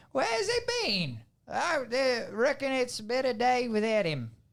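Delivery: put-on Australian accent, very high and swooping. Starting a scene after asking whether they had an accent: Australian accent. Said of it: "That's Australian".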